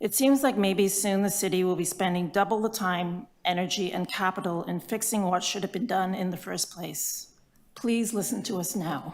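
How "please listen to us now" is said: trembling, shaking voice full of emotion. Speaker addresses the city about a six-year project, voice shaking with emotion. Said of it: "my voice is shaking because this is emotional for me".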